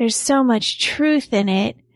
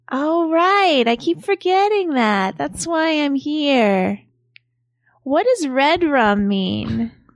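mock spacey, spaced-out, high-pitched voice; 2 semitones higher than usual. Acting out a woman's replies in a retold scene; imitating a spacey high voice. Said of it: "she's like spacey sounding and she's got a high voice".

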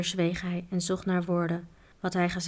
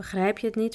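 ordinary delivery, nothing marked

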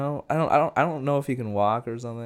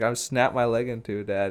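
ordinary talk, nothing marked

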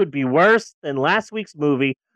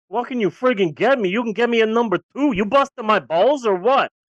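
Brooklyn way of talking; 3 semitones higher than usual. Playing a customer answering a fast-food worker's greeting, in a Brooklyn accent. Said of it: "does everyone in Brooklyn just talk like this?".

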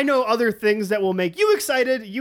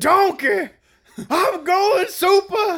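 very high, shrill, off-the-mark cartoon ogre voice; 10 semitones higher, 3 dB louder than usual. Joking about a Super Saiyan Shrek, the speaker does a Shrek impression. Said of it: "That was an amazing impersonation of Shrek".

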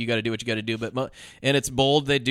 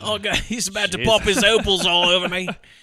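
exaggerated put-on Australian accent; 8 semitones higher, 6 dB louder than usual. Asked by a co-performer to do the bit in the Australian voice, put-on Australian accent. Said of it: "do it the Australian voice".

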